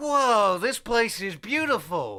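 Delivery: pitched slightly too high. Recording another take of the line for a director, pitched too high. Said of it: "that one just sounded a bit too high".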